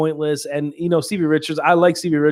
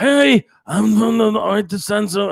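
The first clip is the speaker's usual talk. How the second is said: put-on annoying raspy voice, higher pitched; 6 semitones higher, 3 dB louder than usual. Imitating how a wrestling manager sounded: imitating Stevie Richards' annoying raspy voice. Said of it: "he had that annoying, raspy".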